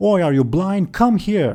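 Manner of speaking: high, barking, yelling voice. Voicing the bartender who calls a customer over: bartender yelling. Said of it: "I just yelled at someone".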